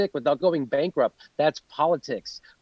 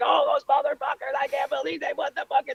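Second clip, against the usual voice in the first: mock screaming rant, pitched higher; 11 semitones higher than usual. Imitating a sports fan upset about the team losing: imitating a screaming sports fan. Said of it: "the guy is screaming about the Red Sox".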